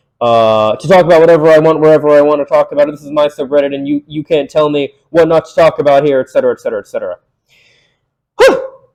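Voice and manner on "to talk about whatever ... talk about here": ordinary talk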